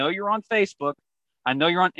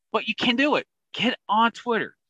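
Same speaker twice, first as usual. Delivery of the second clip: loud, fired-up, energetic shouting; 7 semitones higher than usual. Urging the team to get on Twitter, yelling. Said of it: "Sorry that I'm yelling".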